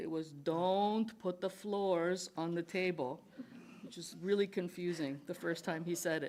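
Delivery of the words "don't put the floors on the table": put-on Quebec French accent. Quoting a phrase dad used to say at home, imitating dad's French-Canadian accent. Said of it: "learned English from French Canadians".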